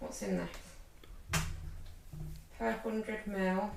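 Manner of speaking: very hushed, off-mic, very quiet slow murmur. Reading a drink label aloud to the others, talking very quietly. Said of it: "You're talking very quietly".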